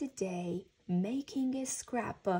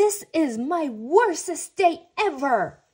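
very loud, high-pitched angry outburst; 6 semitones higher, 12 dB louder than usual. After finding the pond closed for skating, he loses his temper. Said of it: "Franklin lost his temper".

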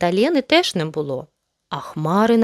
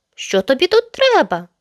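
angry, demanding, pitched-up delivery; 7 semitones higher than usual. Mette, to her brother Yozi who climbed down to his sisters: asked angrily. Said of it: "Сердито запитала Метте".

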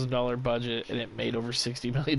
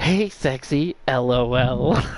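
robotic text-to-speech voice; 8 dB louder than usual. Retelling what a phone read aloud from a typed message: robot voice. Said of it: "it sounds like a robot".

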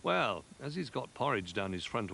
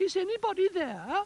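put-on high, loud, shrill and girlish shout; 6 dB louder than usual. Reading a story, the narrator voices Rabbit calling at the bears' door: Goldilocks voice. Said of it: "He called in his Goldilocks voice".

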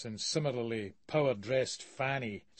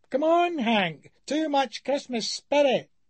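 shrill, loud, very high squeaky chiding tone; 12 semitones higher, 6 dB louder than usual. Narrating, a rotund figure chides a man who vomited, in a high, squeaky voice. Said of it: "in a high, squeaky voice".

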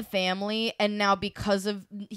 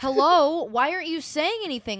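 play-acted baffled, bewildered, pitched-up; 6 semitones higher, 4 dB louder than usual. Retelling a scene, voicing Mercutio: imitating confused Mercutio. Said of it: "Mercutio is just confused as fuck".

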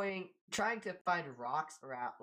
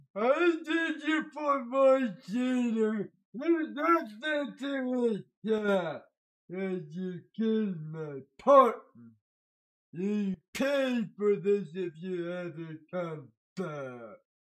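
very loud, thundering, booming giant voice; 3 semitones higher, 10 dB louder than usual. Telling a story to viewers, the speaker voices the giant's threat in a giant voice. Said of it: "You like the giant voice?".

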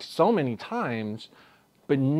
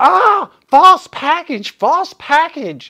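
furious, very loud, very high, shrill, drawn-out yelling; 12 dB louder than usual. Retelling a story where a woman stomps on a kid: imitating a furious yell. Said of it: "just yelling".

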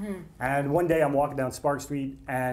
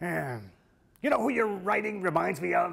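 grainy, rough, gravelly voice; 4 semitones higher than usual. Retelling what a man said after reading the speaker's script, imitating his gravelly voice. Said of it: "in that great gravelly voice of his".

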